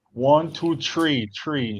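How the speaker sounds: heavy, slow Chicago accent, three said as tree. Pete showing the group how people talk in Chicago: thick Chicago accent. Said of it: "That's how we talk in Chicago".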